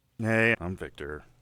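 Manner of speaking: mock defeated tone. Introducing oneself at the start of a podcast: mock defeated tone. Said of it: "You sound a little defeated there".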